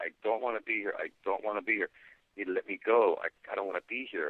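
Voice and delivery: put-on crying, pleading voice. Retelling lying on a metal table and pleading: retelling own crying plea. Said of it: "and I'm crying, and I'm saying".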